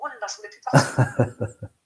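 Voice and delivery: slow, wistful, laughing sigh.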